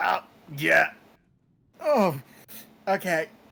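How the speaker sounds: put-on creaky old man straining. Voicing a character whose old bones creak as he sits up: old man straining to sit up. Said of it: "his old man bones do creak as he does".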